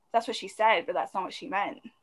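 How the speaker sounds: ordinary talk, nothing marked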